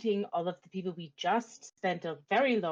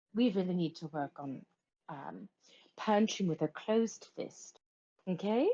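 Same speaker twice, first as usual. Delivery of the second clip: stage half-whisper, quiet aside. Walking away, the character speaks to Kaelor once out of earshot, half-whispering. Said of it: "I'm just gonna kind of whisper to Kaelor".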